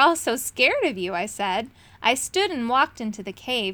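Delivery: ordinary delivery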